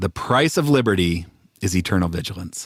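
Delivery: on-air broadcaster, radio announcer delivery. Asked to read a favorite quote for the folks, in a radio voice. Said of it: "in your radio voice".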